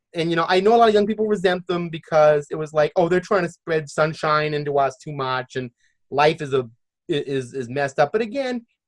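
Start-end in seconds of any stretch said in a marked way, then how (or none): none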